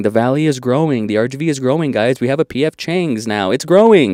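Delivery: mocking, tongue-in-cheek, sarcastic delivery. Speaker in a message recalls the listener's voice: mock-sarcastic. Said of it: "your voice sarcastically saying".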